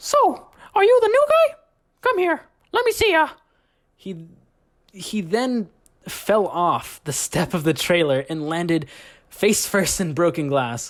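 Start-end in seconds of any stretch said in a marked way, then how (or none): 0.0-3.3 very high-pitched, tiny cartoon mouse voice. Retelling what he yelled at you before falling off the trailer step, as a Mickey Mouse impression. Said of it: "this is me doing a, a Mickey Mouse impression".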